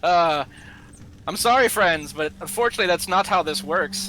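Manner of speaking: loud, talking through a chuckle. Voicing Droon turning away the visitors at the gate: Droon chuckling. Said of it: "Droon will kind of chuckle and just be like".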